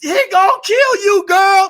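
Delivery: piercing, high-pitched yelling. Acting out an audience member warning a character on screen, imitating yelling at the screen. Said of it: "like you yelled at the movie screen".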